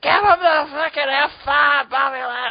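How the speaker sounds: put-on wasted, drunken screaming, pitched very high. Retelling yelling at a fighter from the arena crowd: imitating own drunken screaming. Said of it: "drunkenly screaming at Bobby Lashley".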